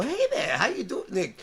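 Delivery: teasing, mocking, fake-friendly, jokey tone. Recalling how the listener greets a caller in his mocking voice: imitating someone's mocking voice. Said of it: "your mocking voice when you go".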